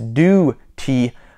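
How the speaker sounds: slow British pronunciation of "duty".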